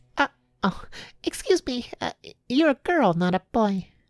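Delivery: quiet, soft, shrill, very high squeaky rat voice. A rat staring at the travellers speaks up, quiet shrill rat voice. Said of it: "a quite quiet, shrill voice".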